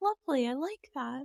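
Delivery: soft, meek, approving motherly voice. In conversation, the speaker reacts, and their mom voice comes out. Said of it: "That's my it's like my mom voice coming out".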